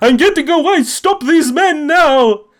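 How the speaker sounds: very high, shrill, ghostly screaming. Voicing a ghost floating away down a river: ghost screaming. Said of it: "as he is screaming at the Dekio police force".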